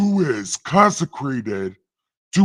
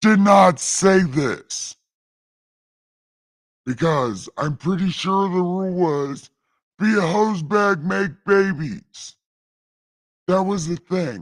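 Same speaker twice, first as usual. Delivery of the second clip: speaking in a god-like voice; 3 semitones higher than usual. Streamer addresses the chat, speaking in God voice. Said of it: "right now in God voice".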